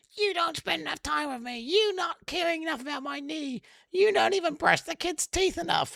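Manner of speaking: high, whiny, hyped-up put-on voice. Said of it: "this hyped up ultra version".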